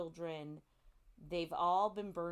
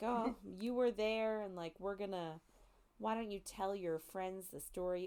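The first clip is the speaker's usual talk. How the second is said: mock teasing tone, higher pitch; 3 semitones higher than usual. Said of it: "are teasing him".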